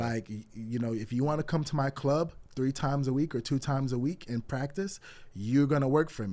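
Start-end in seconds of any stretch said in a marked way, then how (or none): none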